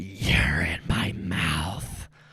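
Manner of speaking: very slow, drawn-out voice of a living house. Voicing the house as it speaks to the players: voice of the house. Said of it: "as the house, like, talks".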